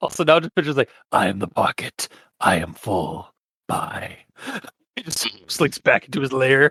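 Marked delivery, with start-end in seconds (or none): 1.1-4.2 soft, raspy creature voice, very low, very slow. Discussing a movie with another speaker, acting out the creature in a soft raspy voice. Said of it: "it was a soft and raspy voice".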